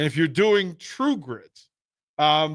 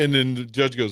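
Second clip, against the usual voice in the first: plain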